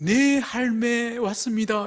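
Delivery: put-on high little-girl voice, about three years old. Retelling a childhood story, imitating a three-year-old sister: small girl's voice. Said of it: "그 여동생의 목소리로 제가 딱 변하면서".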